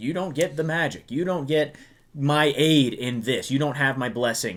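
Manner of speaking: ordinary talk, nothing marked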